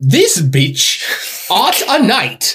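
posh regal voice, very slow, stretched out, swooping. Asked to do the queen saying that, a posh regal Queen impression. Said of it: "Do an impression of the queen saying that".

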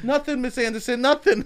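put-on very high, innocent child voice. Playing the child answering the librarian: mock innocent child voice. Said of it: "like a child cursing at a librarian".

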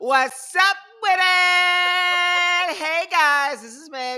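shrill, booming, very high, loud, slow and drawn-out. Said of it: "Give me that high pitch".

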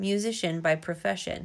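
ordinary delivery

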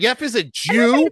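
very high, very loud, drawn-out exclamation. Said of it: "That's exactly how you sounded, Kelsey".

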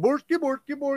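high squeak on nonsense word "bork". Explaining how they get into Swedish accents, Swedish Chef voice. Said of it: "that's how I get into Swedish accents".

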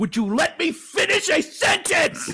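mock fed-up, very high frustrated outburst. Retelling a podcast where his wife kept interrupting him: imitating Patton's frustration. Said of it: "Patton's frustrated voice is just hilarious".

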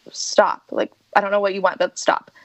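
acted, sharp, irritated, grouchy snap. Retelling a moment of snapping at a friend: imitating herself snapping irritably. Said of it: "I, like, snapped at her".

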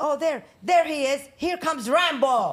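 very high, loud, frightened and furious scream. Retelling a man coming out as another cop arrives, retelling angry, scared screaming. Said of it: "and I'm screaming".

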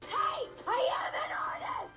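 play-acted very high, very slow, drawn-out mild yell. Recounting a rumor about the Cats cast facing the camera; retelling a scream. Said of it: "just screamed at the camera".

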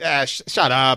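put-on very strong, slow North Jersey Italian accent. Imitating the dad's voice in the speaker's head, North Jersey Italian accent. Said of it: "very North Jersey Italian".

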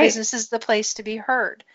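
ordinary delivery

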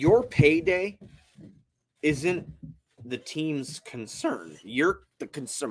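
halting voice, cracking mid-phrase. Co-host on a sports show making a point about a player, voice cracking. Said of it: "My voice cracked".

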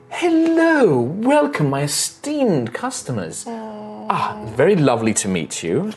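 elegant elf lady voice, high and sing-song. Voicing an elegant elven noblewoman greeting customers: voicing an elven noblewoman. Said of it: "And she comes in".

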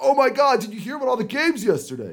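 animated, swooping, high, loud, sing-song buddy voice. Retelling a friend's greeting in the park: Chemi impression. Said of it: "That's pretty good Chemi impression".

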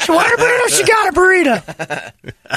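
play-acted very high, swooping, drawn-out scolding yell. Retelling what a friend said about the tooth fairy: imitating Brady yelling. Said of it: "almost like you were yelling at her still".

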